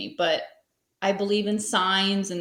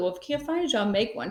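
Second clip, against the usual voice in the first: plain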